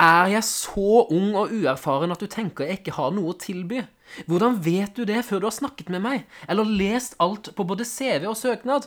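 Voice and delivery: high, loud, whiny, pleading, self-pitying whine. Imitating a job applicant pleading with an employer, mock whiny tone.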